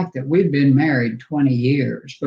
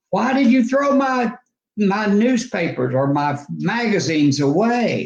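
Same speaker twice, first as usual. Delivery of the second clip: mock, loud, pitched-up, raised-voice demanding tone; 6 semitones higher than usual. Recounting what they said on finding their journals in the trash, retelling a loud question. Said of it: "in a loud voice".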